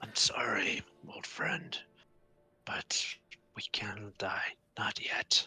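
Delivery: very quiet, soft, breathy whisper. Playing a character who pats an old friend and whispers to him. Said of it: "just whisper".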